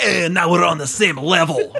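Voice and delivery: cocky, taunting tone in a bad Scottish accent. Retelling a wrestler's taunt from a match: imitating Drew, bad Scottish accent. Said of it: "That didn't sound Scottish at all".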